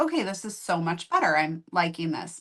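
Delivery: ordinary delivery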